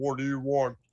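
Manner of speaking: deep, put-on masked henchman guard voice. Retelling a movie scene with masked guards: imitating a deep voice. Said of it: "they got the fucking deep voices".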